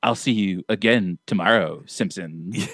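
put-on creepy whisper. Describing a voice actress's delivery of a line, imitating a creepy whisper. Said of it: "she goes into like a creepy whisper".

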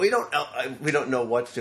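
ordinary talk, nothing marked

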